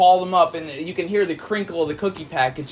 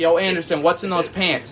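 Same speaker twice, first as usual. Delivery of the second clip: ordinary talk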